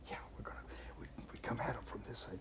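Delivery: soft, hushed whispered murmur. Retelling a moment in the heat of combat, imitating Jack whispering. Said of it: "he's whispering to me".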